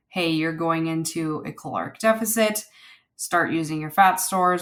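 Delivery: ordinary delivery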